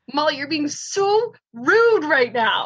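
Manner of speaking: put-on mild scolding tone with a yelling edge. Retelling telling a fallen friend to hurry to the cab: retelling her own screaming. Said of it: "Wendy just starts screaming at me".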